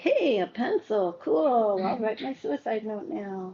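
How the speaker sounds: dry, heavily sarcastic tone. Acting out what someone says while feeling sarcastic: imitating sarcasm. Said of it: "Even when you are feeling so sarcastic".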